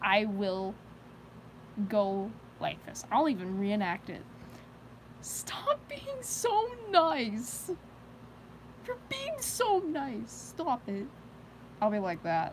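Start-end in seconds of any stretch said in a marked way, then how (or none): 5.2-11.1 very high, slow squeaky voice. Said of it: "I just get into this high-range voice".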